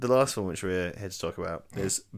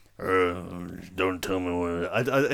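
grumbly put-on voice. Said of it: "a weird, like, grumbly".

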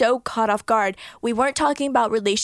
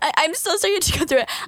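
put-on teary crying, much higher pitch; 7 semitones higher than usual. Retelling apologizing to a man while in tears, retelling a crying apology. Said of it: "I'm crying".

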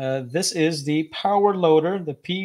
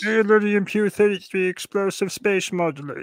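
acted cartoonish alien voice; 4 semitones higher than usual. Asked if friends watched the cartoon, a speaker answers with Marvin the Martian impression. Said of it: "That was pretty good there, [name]".

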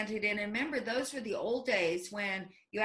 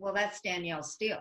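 mock deadpan delivery, faster pace. Retelling the assistant's reply to the speaker's complaint, imitating deadpan delivery. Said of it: "my assistant just totally deadpan says".

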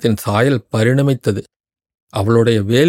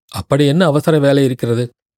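ordinary delivery, nothing marked

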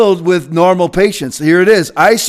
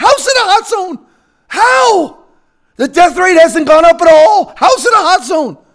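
voice shooting way up, very high-pitched and rising; 10 semitones higher than usual. Questioning how a city counts as a hot zone: high-pitched voice. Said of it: "My voice gets high".

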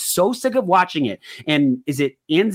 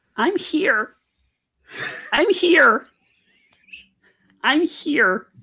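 very high puppet frog voice; 10 semitones higher than usual. Mid sports chat, doing a favourite bit: Kermit the Frog voice. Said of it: "the Kermit frog the frog voice".

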